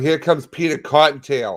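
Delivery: yelling. Joking about a loud neighbor while imitating someone yelling. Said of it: "she keeps yelling".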